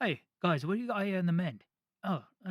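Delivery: put-on Cockney street-thief voice. A voice actor shows how he reads a game thief's lines, Cockney dialect. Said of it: "old, like, uh, Cockney dial".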